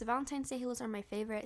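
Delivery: fast, excited, rattled-off delivery.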